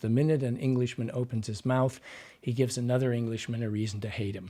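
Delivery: ordinary talk, nothing marked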